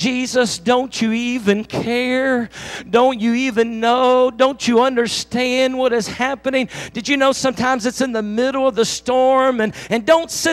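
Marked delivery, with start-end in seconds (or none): none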